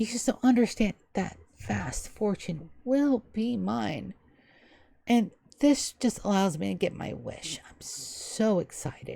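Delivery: soft, refined, genteel, cultured lady's voice. Game master voicing a lady the players overhear across the table, cultured lady's voice. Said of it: "you hear a cultured lady's voice".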